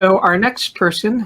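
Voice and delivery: voice cracking up into a squeak. Introducing the next speaker at a talk session, voice squeaking. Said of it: "my voice squeaked".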